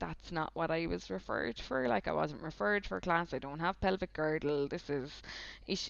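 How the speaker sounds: ordinary delivery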